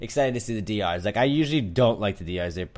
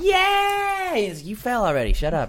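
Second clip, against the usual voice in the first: very high, gloating, with a long drawn-out yay. Recapping the competition, mimicking Rockstar taunting Brett for falling, mock-gloating as Rockstar. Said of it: "And she's like".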